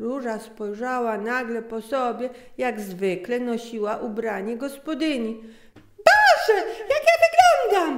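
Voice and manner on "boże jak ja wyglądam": very high, loud, ringing exclamation. Narrator reads a woman looking at her own clothes, exclaiming. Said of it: "Wykrzyknęła znowu".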